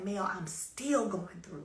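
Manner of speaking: mock crying, words coming out through tears. Retelling a friend's answer on the phone: imitating a friend crying. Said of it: "she just lets out that cry".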